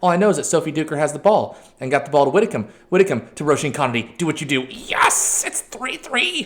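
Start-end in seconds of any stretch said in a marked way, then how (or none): 4.2-6.5 thrilled, very high goofy voice, drawled. Watching a teammate go through on goal, then scoring: really excited. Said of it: "When I get really excited, I sound like".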